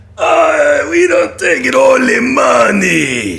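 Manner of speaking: put-on alien voice. Asked by another speaker to do his Watto, giving a Watto impression. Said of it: "do your Watto".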